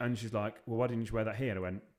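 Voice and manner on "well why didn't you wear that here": plain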